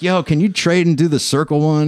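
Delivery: high, carrying shout projected across a room. Retelling calling to another artist across the shop, retelling yelling across the shop. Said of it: "I'm yelling across the shop".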